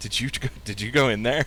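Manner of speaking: gnome voice, kind of laughing. Game narrator voices gnome citizens passing as the player steps outside: laughing gnome passerby. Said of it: "Like kind of laughing".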